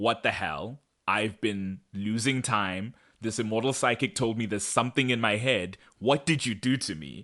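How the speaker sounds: furious, angry, accusing and demanding outburst. Recapping a show episode, acting out Matt's furious reaction. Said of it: "Matt is, of course, furious".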